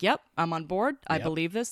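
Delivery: ordinary delivery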